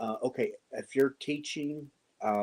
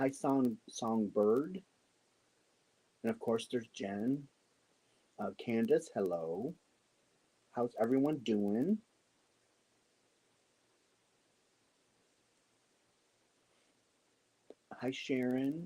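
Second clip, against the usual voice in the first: soft-spoken, hushed voice. Greeting people joining online while someone sleeps upstairs, talking softly. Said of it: "I got to talk softer".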